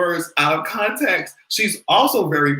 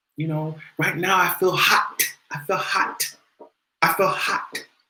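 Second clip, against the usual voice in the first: put-on crisp T sounds, spoken quieter; 4 dB quieter than usual. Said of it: "she pronounced that T like that".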